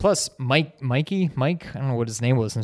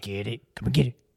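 creepy clown voice. Discussing the movie's opening scene, quoting the clown in a creepy Pennywise voice. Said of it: "he's just all like creepy".

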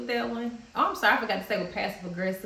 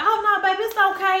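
very loud, shrill, very high passive-aggressive sweetness; 12 semitones higher, 10 dB louder than usual. Acting out own past words to a partner: imitating a sarcastic tone. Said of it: "slamming the door while I'm taking the food".

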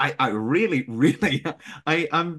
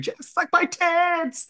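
put-on shrill, very high, slow, drawn-out woman's scream. Retelling what a woman shouted at jeff, imitating a woman screaming. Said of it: "a woman screaming".

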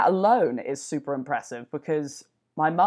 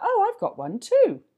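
put-on English accent with voice way up high. Retelling a phone call with their mum, imitating her english accent. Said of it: "That's my English accent".

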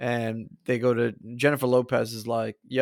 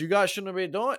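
put-on poor, pitched-up Latin American accent; 8 semitones higher than usual. Retelling a movie scene, quoting Jon Voight's bad Latin American accent. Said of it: "He's trying to do like a Latin American accent".

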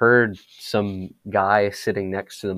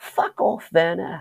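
put-on very high-pitched small child's voice; 9 semitones higher than usual. Retelling what a young fan shouted near the field mic: imitating a seven-year-old kid. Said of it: "this little, like, seven-year-old kid. He's like".

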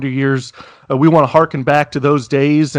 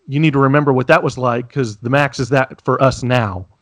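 usual speaking voice

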